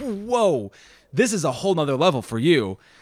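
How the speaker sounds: usual speaking voice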